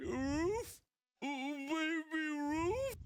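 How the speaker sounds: very high, very slow, drawn-out voice. Retelling the first scene with Sloth: Sloth impression. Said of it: "he's like".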